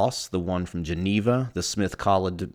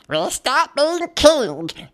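mock elderly woman voice; 7 dB louder than usual. Retelling an exchange from an ancient story, a speaker does an old lady voice. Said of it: "It's a good old lady voice".

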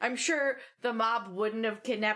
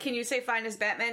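normal talking voice

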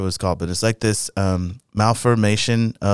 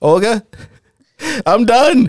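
put-on panicked pleading, higher and louder; 14 semitones higher, 7 dB louder than usual. Retelling a morning phone call to the boss: imitating his own panicked call. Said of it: "I was totally panicking".

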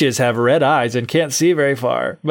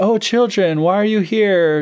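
feigned concern, much higher pitch; 6 semitones higher than usual. Retelling a scene where a woman greets children at her house, acting concerned. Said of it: "she's all concerned for them".

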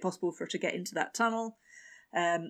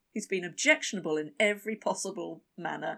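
usual speaking voice

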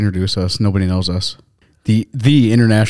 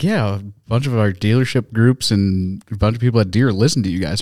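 ordinary talk, nothing marked

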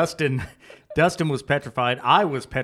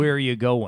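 very deep movie-devil voice; 3 semitones lower than usual. Retelling a male voice heard while leaving, imitating a very deep devil voice. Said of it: "like a very deep voice, the stereotypical devil in all of the movies".

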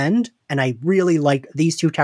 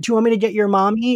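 imitated condescending tone, pitched higher; 7 semitones higher than usual. Retelling what she would say to a guy trying to fight, mock-condescending. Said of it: "she means it to be condescendingly".

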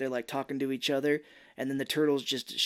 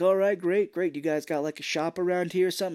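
acted-out, keyed-up, excited and eager character voice; 4 semitones higher, 3 dB louder than usual. Retelling a movie scene, quoting a character: imitating excited character. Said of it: "Casey Jones is all excited".

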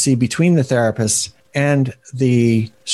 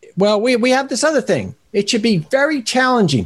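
put-on very high, sleazy Bronx accent voice; 9 semitones higher than usual. Describing how therapists talk, speaker makes them sound like a shyster Bronx lawyer. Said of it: "shyster lawyer from the Bronx or something".

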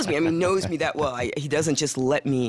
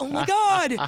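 high, loud, exasperated outburst. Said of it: "I'm like".

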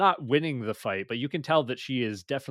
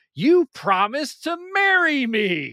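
very high, very loud, shrill, drawn-out swooping scream; 13 semitones higher, 9 dB louder than usual. Recounting an episode's fight, the speaker acts out her line: retelling her scream. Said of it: "she screams at him".

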